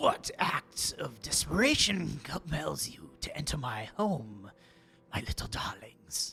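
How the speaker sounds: low croaking creature voice like a toad. Narrator voices a toad-like creature speaking to the players at its door, low croaking toad voice. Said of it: "speaks to you in a low, croaking voice".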